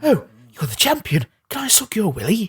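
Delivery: high, swooping, sing-song, fawning gushing voice. Going through characters with co-hosts, he attempts the next one, an Adoring Fan impression. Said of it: "I can't remember how his voice goes".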